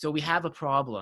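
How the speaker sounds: slow, super condescending, patronising tone. Retelling what a tournament organizer said: imitating a condescending tone. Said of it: "He says it, like, super condescendingly".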